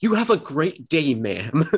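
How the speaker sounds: snarky, douchey, smug politeness. Showing how a man sounds even when helping an old lady, imitating a douchebag voice. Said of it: "it's going to sound like a douchebag".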